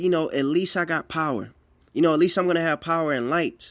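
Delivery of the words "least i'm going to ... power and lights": ordinary talk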